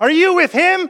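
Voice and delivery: high, loud accusing callout.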